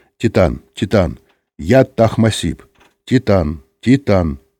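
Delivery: ordinary delivery, nothing marked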